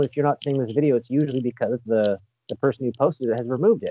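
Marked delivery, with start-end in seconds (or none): none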